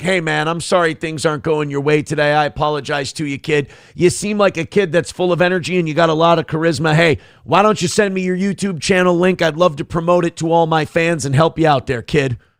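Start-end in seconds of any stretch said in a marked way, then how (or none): none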